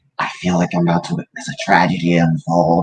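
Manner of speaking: half-whispered stage whisper. Voicing Theo half-whispering to the party from far away: half-whispering to the party. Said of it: "Theo kinda whispers to".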